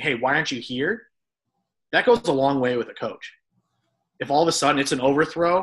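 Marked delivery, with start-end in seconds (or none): none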